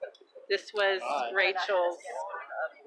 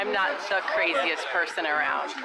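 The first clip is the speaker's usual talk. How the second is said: usual speaking voice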